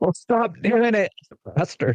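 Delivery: acted-out, very high, loud yell. Telling a joke where a fan in the front row yells back: imitating a heckler yelling. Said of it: "from the front row yells".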